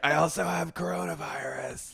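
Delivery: rough, hoarse, creaky rasping croak, very slow. Retelling a spring break girl's interview answer: imitating a hoarse voice. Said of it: "had that horrifically hoarse voice".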